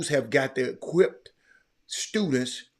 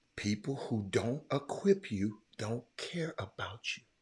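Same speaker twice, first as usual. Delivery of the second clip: slower, deliberate, much quieter and lower; 5 semitones lower, 11 dB quieter than usual. Repeating a line to the audience after asking if it was too fast: slower deliberate repeat. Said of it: "did I did I say that too fast?".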